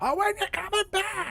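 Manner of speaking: put-on very high, soft little old-lady voice. Recalling a scene where Biff heads out, quoting his grandma: old grandma voice. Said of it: "doing the voice of his own grandma".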